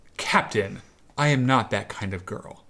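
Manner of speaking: put-on young-sounding voice. Reading fan fiction aloud as Mary Sue, refusing the captain: Mary Sue voice. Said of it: "including the character Mary Sue".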